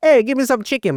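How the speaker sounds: very high fat Italian guy voice. Retelling a movie scene: imitating Viggo Mortensen as a fat Italian guy. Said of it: "he's like this fat Italian".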